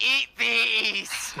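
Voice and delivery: high, gleeful, gravel-edged put-on character shout.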